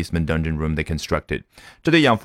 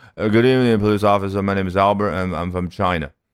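put-on drunken, slurred speech with words smeared together. Retelling being stopped by a police officer after drink-driving: drunken slurred speech. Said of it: "所以一个人含糊不清的表达，这个动作就叫slur".

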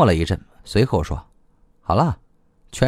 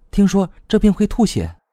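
deliberately overblown mock alarm, pitched up; 7 semitones higher than usual. Narrating a novel, voicing a character's reply with deliberately exaggerated alarm. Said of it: "莫兰故意大惊小怪".

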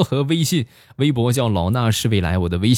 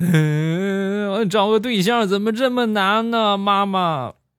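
very high, drawn-out, tearful wailing whine; 10 semitones higher than usual. Retelling a friend's complaint after a failed blind date, imitating crying. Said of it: "回家就哭".

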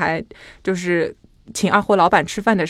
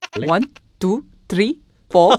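Indian English accent. Showing how people in India count in English: Indian English accent. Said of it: "那个舌头特别的灵活，他们是这样讲的".

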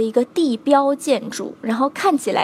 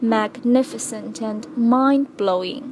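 "magnificent" and "mind-blowing" given heavy stress. Teaching how to read the two adjectives: slow, stressed magnificent and mind-blowing. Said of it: "应该要慢一些，应该要重点突出一些……用这样的一个语调，这样的一个重读".

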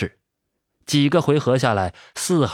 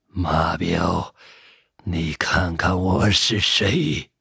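hoarse, raspy voice; 6 semitones lower than usual. Number Five addresses old Ma face to face, in a hoarse voice. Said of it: "发出沙哑的声音".

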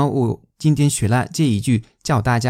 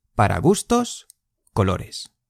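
pause after gustos, then colores; 4 semitones lower than usual. Teaching the phrasing of a spanish saying, pause between gustos and colores. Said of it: "Gustos 和colores 之间有一个停顿。".

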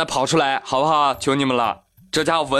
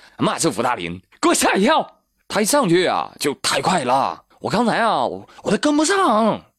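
put-on Northeastern Chinese accent; 3 semitones higher than usual. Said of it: "你听这孩子一口地道东北腔".

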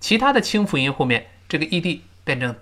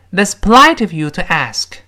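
strongest stress on the words "polite" and "ask"; 4 semitones higher, 9 dB louder than usual. Reading an english example sentence aloud, stress on polite and ask. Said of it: "注意polite 和ask 声音最重".

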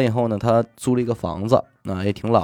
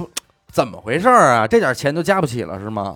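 mock annoyed, impatient scolding tone. Retelling how the manager spoke: imitating an impatient manager. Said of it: "经理非常不耐烦地说".

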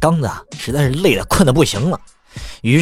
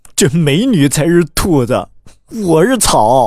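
crestfallen, deflated, dejected voice, pitched up; 5 semitones higher than usual. Joke teller quoting his older cousin's reply: acting out a dejected reply. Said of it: "就非常沮丧".

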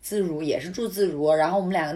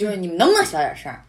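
mock-rude blunt voice, no politeness, louder; 6 dB louder than usual. Retelling how a man pounding on their door demanded quiet, imitating a rude demand. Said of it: "就毫不客气，".

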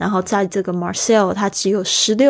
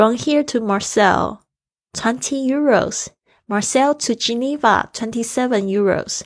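put-on thick French accent; 2 semitones higher than usual. Retelling the man who checked your tickets, in a thick french accent. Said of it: "非常浓厚的。法语腔调的英文".

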